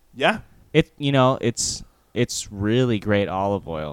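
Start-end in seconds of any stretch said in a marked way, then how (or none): 1.4-4.0 insincere, mocking, sarcastic tone. Describing what the Corleone family tells people under its protection, sarcastic. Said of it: "if you can hear the sarcasm".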